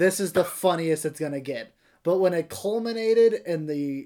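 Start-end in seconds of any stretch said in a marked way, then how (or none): none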